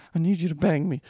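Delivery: put-on whisper. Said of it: "whispering in your ear".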